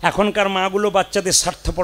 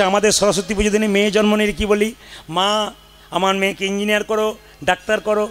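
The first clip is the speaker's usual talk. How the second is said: plain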